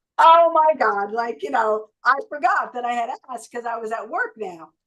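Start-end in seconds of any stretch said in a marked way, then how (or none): 0.2-1.2 high, loud exclamation breaking into laughter. Retelling being handed the check at work, imitating own cracking up. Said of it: "cracking up going".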